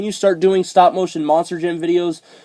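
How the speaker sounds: usual speaking voice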